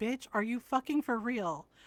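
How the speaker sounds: imitated angry voice. Retelling a reaction to a Reddit thread: retelling own angry words. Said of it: "I was mad too".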